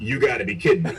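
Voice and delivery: ordinary talk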